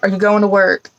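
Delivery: ordinary delivery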